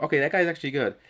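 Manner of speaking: plain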